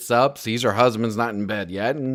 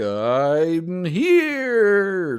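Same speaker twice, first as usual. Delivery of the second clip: spooky put-on ghost voice, much higher; 7 semitones higher than usual. Discussing a squeaky sound in a ghost story, demonstrating a spooky ghost voice. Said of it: "like what you hear with ghosts".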